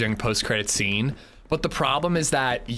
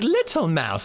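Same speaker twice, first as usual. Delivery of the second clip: put-on little child voice, higher pitch; 6 semitones higher than usual. Retelling what a small child always says: imitating baby Zed. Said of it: "Or she's like".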